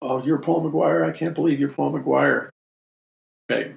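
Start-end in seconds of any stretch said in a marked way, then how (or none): 0.0-2.5 freaked-out, gushing starstruck fan losing it completely. Speaker retelling a girl meeting him at a book signing, imitating a fan freaking out. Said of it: "she totally freaks out".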